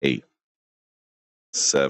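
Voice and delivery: deliberately dragged out, low and slow. Counting down to Jerry, going slow for him, counting real slow. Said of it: "I'm going real slow for you".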